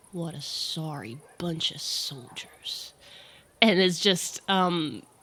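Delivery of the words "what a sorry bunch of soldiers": slow, hushed mutter under the breath. Voicing a character walking slowly through the hall: loud mutter under the breath. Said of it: "really loudly under their breath says".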